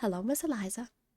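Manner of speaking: sugary, sweet-toned voice. Narrator reads Sam greeting Eliza at her mailbox: sweet voice. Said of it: "addressing her in his sweet voice".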